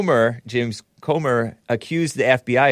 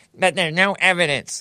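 annoying, pitched-up, know-it-all tone; 6 semitones higher than usual. Imitating a news anchor interrupting a congressman: imitating Caitlin Collins as an annoying know-it-all. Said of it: "She's kind of annoying like that".

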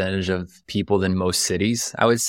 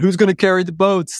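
very high, pumped-up, fired-up shout; 11 semitones higher, 4 dB louder than usual. Retelling working out early in an apartment: imitating own yelling. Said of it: "I'm yelling".

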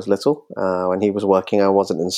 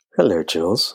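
mock sultry podcast-style voice. Greeting the interviewer at the start of the podcast: put-on sultry podcast voice. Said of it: "Do you like my sultry, my sultry podcast voice?".

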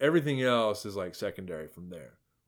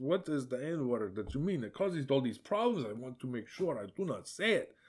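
soft, approximate put-on Ukrainian accent; 3 semitones higher, 6 dB quieter than usual. Demonstrating a character's line, unsure the accent is right: ukrainian accent. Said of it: "It says".

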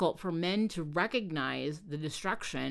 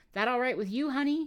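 gentle, tender, pitched-up voice; 6 semitones higher than usual. Narrator reading a husband checking with his wife in the back seat: gently asking. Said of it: "He gently asked Leslie".

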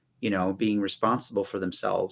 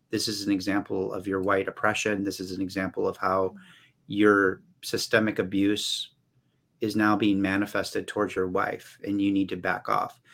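ordinary talk, nothing marked

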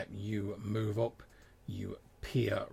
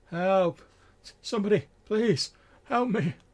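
put-on distant cry, much higher, louder; 10 semitones higher, 11 dB louder than usual. Describing a voice heard from a distance, imitating a distant cry for help. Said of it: "And this voice is like".

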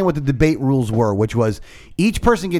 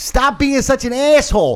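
mock very high, shrill, furious shout; 10 semitones higher than usual. Retelling yelling at what they heard while driving down the road, retelling a yell. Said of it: "I yelled it".

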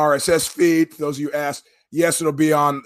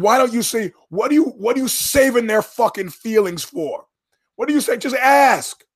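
put-on high-pitched yelling, screaming rant; 8 semitones higher than usual. Retelling yelling at the radio while driving: retelling own screaming at radio. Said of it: "And so I'm screaming".

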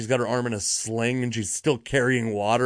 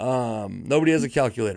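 ordinary delivery

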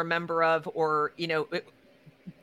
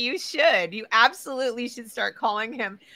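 ordinary talk, nothing marked

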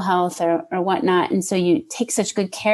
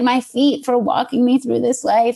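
voice choked with tears, higher; 5 semitones higher than usual. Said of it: "I'm crying".

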